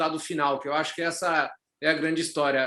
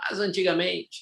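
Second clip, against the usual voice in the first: put-on elderly man's way of talking. Joking about being old, starting a line in an old man voice. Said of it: "tem que fazer voz de velho".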